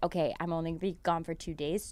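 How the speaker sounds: very quiet, hushed half-whisper. Retelling what was said to a left-behind stuffed animal: retelling a half-whisper. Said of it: "I whispered in his ear and said".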